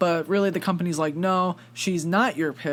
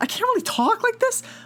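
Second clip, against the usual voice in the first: super high-pitched put-on voice. Imitating how Jake Gyllenhaal sounds through a movie: super high-pitched voice. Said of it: "the super high pitched voice. And I'm gonna try and imitate it here".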